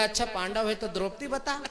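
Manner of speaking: ordinary delivery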